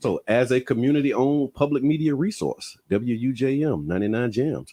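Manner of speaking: on-air radio station announcer voice. Host reading a support script to the listening audience, in a radio announcer voice. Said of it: "It's my radio voice".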